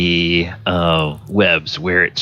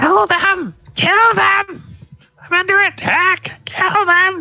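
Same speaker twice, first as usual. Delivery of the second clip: squawking, shrieking harpy cry, higher. Voicing the last harpy calling out while under attack: squawking, crying harpy voice. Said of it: "squawks and cries and says".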